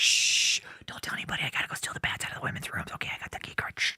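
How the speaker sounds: hushed, secretive, sneaky whisper. Imitating someone sneaking around a hotel at night: imitating someone whispering. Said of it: "He's like".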